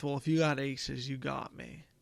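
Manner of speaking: mumbled under the breath. Retelling what an opponent said to himself: imitating a mumble under breath. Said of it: "he mumbles under his breath".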